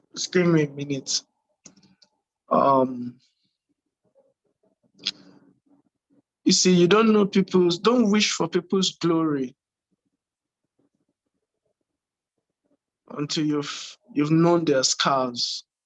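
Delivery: voice holding back tears. Speaking to the ladies and gentlemen about her: holding back tears. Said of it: "really trying to fight back tears here".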